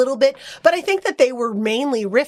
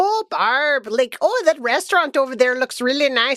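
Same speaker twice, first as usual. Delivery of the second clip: terrible, exaggerated, overdone Midwestern American accent; 3 semitones higher than usual. Imitating a recent movie's midwestern characters in a terrible midwestern accent. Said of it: "Midwestern accents ... I'm doing a terrible accent".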